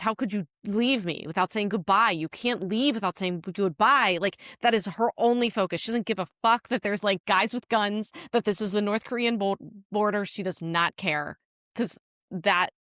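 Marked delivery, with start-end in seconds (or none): 0.0-4.2 put-on tearful sobbing. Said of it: "she's sobbing".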